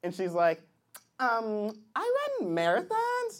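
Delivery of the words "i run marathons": put-on young girl voice.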